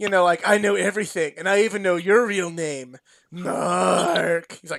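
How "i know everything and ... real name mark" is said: monstrous demon voice. Retelling a cartoon demon taunting The Undertaker: imitating the demon voice. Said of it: "the demon's like, you know, and it's legitimately The Undertaker doing the voice".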